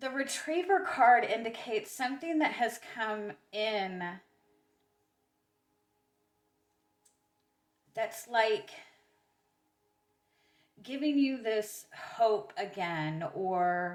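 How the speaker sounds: voice all wobbly, unsteady, shaky and trembling. Doing a card reading, explaining the retriever card, shaky voice. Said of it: "my voice is all shaky".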